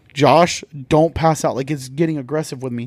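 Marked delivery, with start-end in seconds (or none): none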